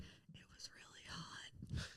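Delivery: very quiet, breathy, slow, drawn-out, barely audible whisper. Retelling what Curtis whispered to Tommy on the bed, imitating Curtis whispering. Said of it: "was whispering so you could like barely hear it".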